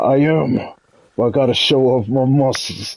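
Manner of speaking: mock exaggerated, overacted theatrical delivery. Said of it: "It's like".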